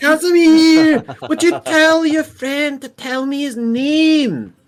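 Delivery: very high, shrill, irritating elf voice. Voicing a scarred female elf used to fighting: high-pitched irritating elf voice. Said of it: "it's what this lady sounds like".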